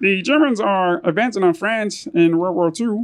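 weak, bad, very high cartoon frog puppet voice. Try the impression again after being told it sounds like an old newspaper guy, bad Kermit the Frog voice. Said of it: "You have the best Kermit the Frog".

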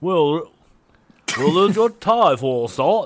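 attempted scouse Liverpool accent. Prompted by another speaker, attempting a Liverpool accent. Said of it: "give it a stab".

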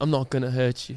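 put-on low, soft British accent. Retelling calming an anxious woman, the speaker says it in a British accent. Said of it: "I in a British accent".

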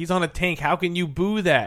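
mild, exclaimed, protesting tone. Speaker recalls yelling at the people around them when Rusev came out, retelling a yell. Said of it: "I remember yelling".

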